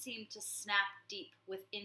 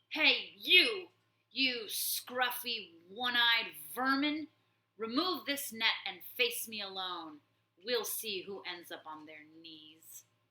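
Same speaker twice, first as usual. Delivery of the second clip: rough, gruff, raised, scornful taunting voice; 7 dB louder than usual. Reading a story aloud, a trapped badger taunts the warlord: gruff insulting voice. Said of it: "in a gruff, insulting voice".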